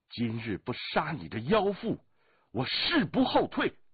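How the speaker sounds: furious, angry bellowing roar climbing high in pitch. Narrator reads a wounded swordsman shouting at his opponent, angry roar. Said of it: "独孤剑怒喝了一声".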